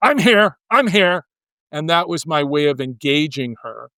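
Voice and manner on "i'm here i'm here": play-acted annoyed, insistent, raised, pitched-up angry voice. Retelling how she answered when he knocked and asked if anybody was home, imitating an angry reply. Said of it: "she'd get angry and say".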